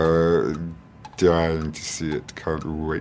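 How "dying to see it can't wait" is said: slow voice, each word drawn out. Doing impressions on request: Alan Rickman voice. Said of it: "Alan Rickman".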